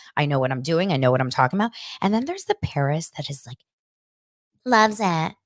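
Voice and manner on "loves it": put-on high-pitched, childlike baby voice. Describing how she turns into that girl who loves it, Paris baby voice. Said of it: "the high voice Paris, the baby voice".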